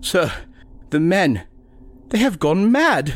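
very high, frightened, pleading whimper. Waiting on deck, the doctor reports to the captain, whimpering. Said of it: "the doctor whimpered".

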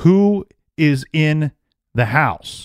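stern police officer voice, barked, yelled, pressed hard. Recounting an officer shouting a question at the house in the rain; imitating an officer yelling. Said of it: "The officer yells again".

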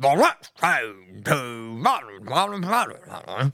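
very slow, stretched station announcer voice. Describing someone's announcing voice, imitating a train announcer. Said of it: "that like voice when I go".

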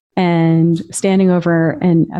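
ordinary delivery

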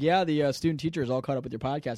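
ordinary delivery

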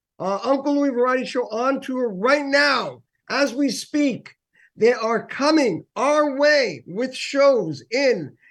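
high, excited, full-on screaming. Host introducing guests on the microphone, screaming. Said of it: "I don't know why I'm screaming".

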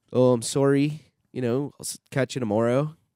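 attempted put-on Canadian accent. Trading accent attempts, one speaker tries Canadian: put-on Canadian accent.

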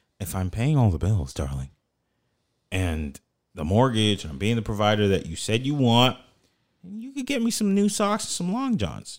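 meek, modest, humble, swooping sing-song. Retelling a husband's request to his wife about socks: imitating a humble tone. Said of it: "he said it in a very humble way".

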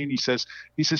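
ordinary talk

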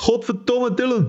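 yelling in Belgian accent. Showing how he wants his name screamed, screaming with belgian accent. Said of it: "scream my name with a Belgian accent".

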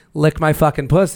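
plain

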